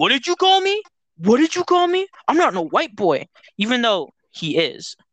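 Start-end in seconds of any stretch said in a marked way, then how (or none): 0.0-3.3 very high, shrill, repeated yelling. Retelling how a boy reacted to being called a name, imitating someone yelling. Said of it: "And he like yells all the time".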